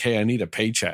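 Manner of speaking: ordinary talk, nothing marked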